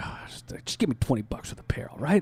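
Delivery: quiet, under-the-breath muttering. Retelling a ticket seller's offer: imitating someone speaking under his breath. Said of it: "he just looks at me under his breath".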